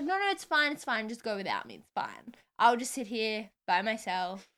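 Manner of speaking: ordinary talk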